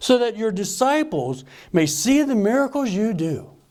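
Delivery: mock heavy sarcasm. Retelling words addressed to Jesus, acting out heavy sarcasm. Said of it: "Heavy sarcasm".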